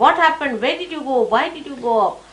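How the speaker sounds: worried, mild scolding outburst. Retelling how a worried mother shouted at her child: imitating a mother shouting. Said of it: "she shouted at her".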